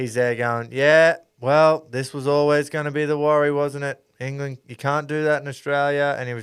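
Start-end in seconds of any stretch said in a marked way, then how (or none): 0.7-6.2 mock flat, negative, monotone commentator drone. Retelling what a radio commentator said about England: imitating monotone negative commentary. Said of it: "real monotone negative".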